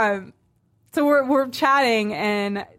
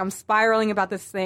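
ordinary talk

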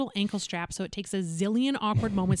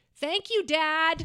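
put-on, flustered, high, slightly too loud blurt; 8 semitones higher than usual. Retelling a nervous goodbye at the door: imitating saying it a little too loudly. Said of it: "a little too loudly".

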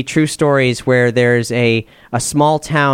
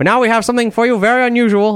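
put-on Swiss accent, very high-pitched; 9 semitones higher than usual. Retelling what was announced at a folk festival: Swiss accent. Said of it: "except in a Swiss accent".

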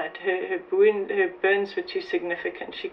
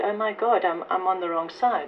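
ordinary delivery

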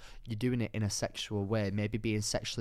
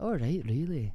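put-on Scottish accent with raised pitch. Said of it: "Do your best Scottish".

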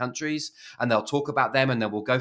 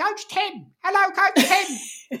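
put-on tiny, very high, slow little baby voice; 4 dB louder than usual. Retelling how people greet him as Coach Tim, in a little baby voice. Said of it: "little baby voices".

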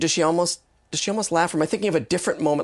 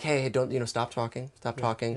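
put-on comforting, intimate voice, lower and quieter; 5 semitones lower, 8 dB quieter than usual. Retelling a film scene and quoting the character: imitating Max speaking comfortingly. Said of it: "In a very comforting way".

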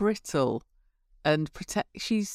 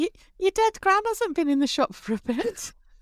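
very high-pitched, slow put-on voice; 12 semitones higher than usual. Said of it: "we've gone really high-pitched".

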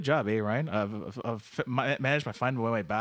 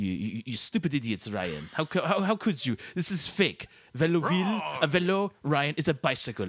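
put-on French-Canadian accent; 3 semitones higher than usual. Scolding someone over a place name, in the Quebecois Dave voice. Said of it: "Quebecois Dave".

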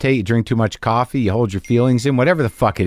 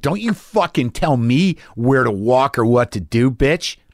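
louder, raised voice, much slower pace. Retelling a hallway argument with a man, in a louder tone. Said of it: "I said that in a louder tone".

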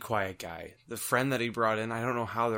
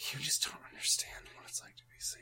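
whispered, muttered under the breath; 4 semitones higher, 11 dB quieter than usual. Retelling what a guy muttered at the speaker's regular: retelling an under-breath mutter. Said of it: "I heard this guy at one point under his breath go".

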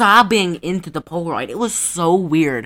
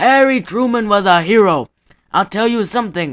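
cartoon grandpa-style old man voice; 3 semitones higher, 4 dB louder than usual. Retelling what an old man said, the speaker imitates his old-man cartoon voice. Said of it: "He sounded like him".

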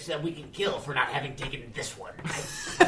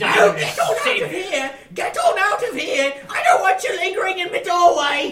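very high, very loud, shrill holler; 9 dB louder than usual. Playing the bartender ordering the party out of her doorway, yelling lady bartender voice. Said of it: "Look, lady, / bartender".

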